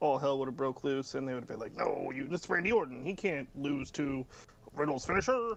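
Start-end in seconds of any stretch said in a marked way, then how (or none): 1.7-5.5 low-key, slow, unhurried voice. Imagining the reaction if Riddle had won with his finisher: low-key Vince McMahon impression. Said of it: "my low-key Vince impression".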